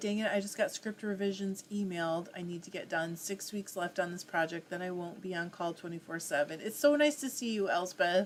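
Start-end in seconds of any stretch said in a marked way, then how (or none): none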